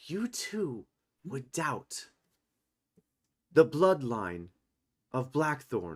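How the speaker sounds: nearly hushed, pointed tone. Storyteller voicing a character addressing Yora and Trisanthum, in a hushed tone. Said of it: "in a almost hushed tone".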